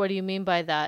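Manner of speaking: ordinary talk, nothing marked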